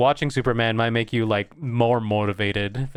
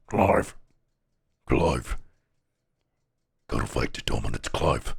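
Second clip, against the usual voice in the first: gravelly voice like gargled cigarettes; 11 semitones lower than usual. Telling what you kept hearing in your head from Final Fantasy 16, in a Sid voice. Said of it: "I just kept hearing in my head".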